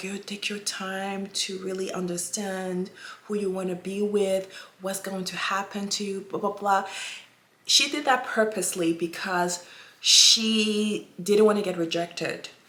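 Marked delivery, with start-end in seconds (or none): 0.0-6.9 put-on soft-spoken voice, quieter. Retelling how she spoke to him, imitating someone speaking softly. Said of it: "she was really, um, soft".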